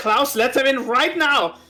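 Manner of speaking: shouting in a character voice. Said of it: "screams up".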